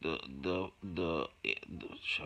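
stammering. Giving directions to a Facebook page early in the day: stuttering. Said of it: "it's early, I'm stuttering".

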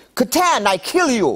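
put-on very high-pitched, angry, mad voice. Recalling a girlfriend from russia and what she said when mad, imitating angry girlfriend. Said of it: "when she got mad, she would say".

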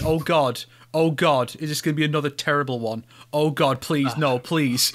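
ordinary delivery

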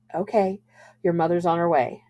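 ordinary delivery

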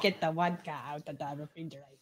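put-on Russian accent. Joking about vodka: fake russian accent. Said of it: "you were trying to do Russian".

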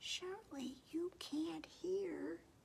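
the tiniest possible hushed little voice. Narrator reads Mouse speaking to Bear from the closet corner, in the tiniest possible voice. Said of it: "said in the tiniest possible voice".

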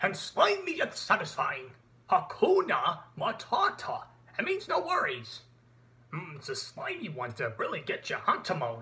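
animated cartoon voice with swooping pitch. Moving on to the next voice named: Pumbaa voice. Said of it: "And Pumbaa".

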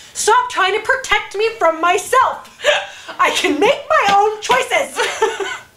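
mock very high, shrill, deliberate, drawn-out yell. Retelling yelling at a vending machine that refused quarters: imitating yelling at a machine. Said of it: "I'm yelling at the machine".

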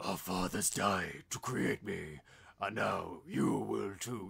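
very deep, low, gravelly, rough growling monster voice. Quoting a movie line while discussing its characters: Venom voice. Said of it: "I can't do the Venom voice".

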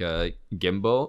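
gimbal carefully spelled out, slow and drawn out. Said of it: "it's called, like".

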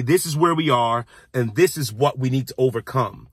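ordinary talk, nothing marked

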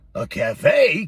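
gasped, with a caught breath. Shifty reacts to a sausage dog's suggestion, gasping. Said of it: "Gasped Shifty".

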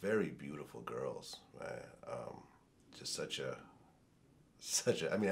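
tearful, choked-up voice, halting words. Talking about a picture of the other speaker's late sisters: tearing up. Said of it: "I'm actually tearing up right now".

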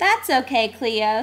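plain

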